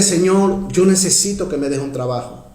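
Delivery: ordinary delivery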